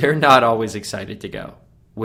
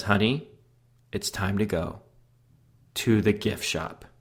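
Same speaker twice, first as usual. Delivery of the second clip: said with all sweetness, very sweet and honeyed; 7 dB quieter than usual. Retelling how the wife asked to go to the gift shop: imitating wife speaking sweetly. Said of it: "she comes up very sweetly".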